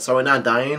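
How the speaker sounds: ordinary delivery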